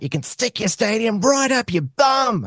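very high, full Australian bogan voice. Quoting a politician who told an anti-stadium rally off: Jackie Lambie impersonation. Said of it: "That's my Jackie Lambie impersonation".

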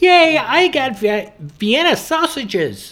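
put-on very high, swooping little-kid voice. Imagining what a kid would say, in a put-on kid voice. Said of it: "If I could make a kid voice".

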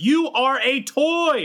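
very high, slow, drawn-out yell. Recalling a movie line as if heard in the ear: Tom Hanks as Woody yelling. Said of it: "I literally hear Tom Hanks being like".

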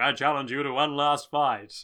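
two layered voices speaking as one. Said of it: "a double voice where it's A C D C's voice and Susie Q's voice".

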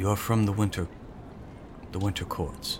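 hushed voice. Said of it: "and he lowers his voice".

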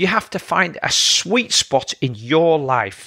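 your stressed, phrase said slowly. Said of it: "I emphasize the word your".

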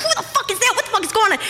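fast, rushed, rattled-off alarmed screaming. Recounting jumping out of bed in a scare, retelling screaming at the boyfriend. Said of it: "I'm screaming at my boyfriend".

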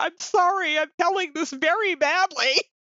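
put-on very high, tearful laugh-talking. Retelling how another actor told a story: imitating someone laughing to tears. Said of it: "the actor telling the story was in tears, laughing".

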